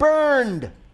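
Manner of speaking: high, loud, yelled shout. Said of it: "the fielder must yell".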